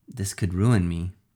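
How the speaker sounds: usual speaking voice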